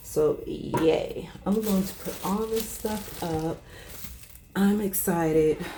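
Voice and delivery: worn-out, tired, weary voice. Sorting soup from the church while talking to viewers, tired voice. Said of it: "Don't let the tired voice fool you".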